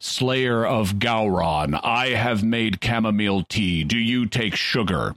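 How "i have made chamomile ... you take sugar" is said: loud, booming, projected voice. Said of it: "in his Michael Dorn projecting voice".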